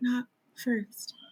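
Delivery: mock muttering under the breath. Speaker acts out a man leaving after being told to knock, imitating muttering under breath. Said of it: "like muttering under his breath".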